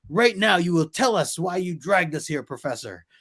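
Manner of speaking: high-pitched yell, patience gone. Retelling a comic scene, the character pointing his finger: imitating Sunfire yelling. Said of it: "he's just yelling at him".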